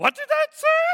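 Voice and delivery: very high-pitched, loud puppet-style voice. Speaker asks what the cover said in a Grover voice. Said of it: "That is my spot-on imitation of Grover".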